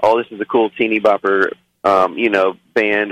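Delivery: ordinary talk, nothing marked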